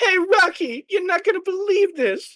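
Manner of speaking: loud shouting, yelling. Voicing the waitress calling out to Rocky: waitress yelling over the crowd. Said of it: "I can hear the waitress yelling over the crowd".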